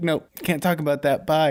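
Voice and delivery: rude, curt, offhand and dismissive. Imitating cemetery staff brushing off a ghost question: imitating rude dismissive staff. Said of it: "they would just be assholes".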